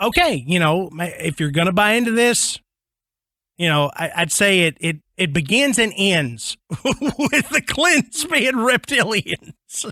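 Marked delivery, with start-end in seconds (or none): 5.2-9.9 talking through laughter, higher. Naming the clintons as reptilians, laughing while talking. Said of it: "I can't say it without laughing".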